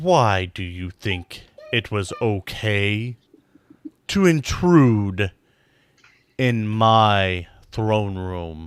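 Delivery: low, slow, rumbling dragon voice that carries. Voicing a huge dragon questioning intruders in its throne room: rumbling dragon voice. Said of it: "it just carries and rumbles".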